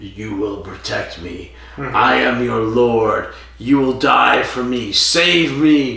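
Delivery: weird demonic voice. Retelling a scene where a possessed character sits up and speaks, Lord Kiv demonic voice. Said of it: "goes in this weird demonic voice".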